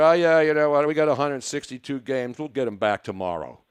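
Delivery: disinterested, offhand tone. Mocking players who do not care about losing: imitating a disinterested player. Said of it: "None of these disinterested guys".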